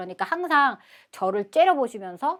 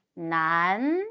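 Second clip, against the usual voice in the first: 난 with an upward-tilting ending; 2 semitones lower than usual. Reading chinese characters aloud in a lesson: rising pitch at end of 난. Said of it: "끝에 이렇게 올려주시면 되겠죠".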